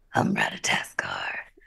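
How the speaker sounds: whispered, extra-deep, breathy near-whisper. Answering how the squirrel Ratatoskr would sound: Stellan Skarsgård-esque voice, but deeper. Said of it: "a Stellan Skarsgård-esque voice".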